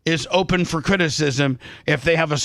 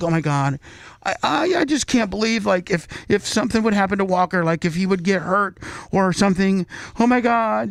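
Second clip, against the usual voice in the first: put-on crying lament, tearful whine, stammering and halting; 3 semitones higher than usual. Imitating someone getting upset over a hypothetical harm: mock crying. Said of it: "that would be like you crying right now".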